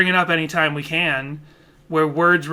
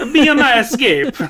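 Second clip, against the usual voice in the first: bad fake Italian accent, higher and louder; 8 semitones higher, 6 dB louder than usual. A host jokes about redoing songs, in a bad Italian accent. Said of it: "in a bad Italian accent".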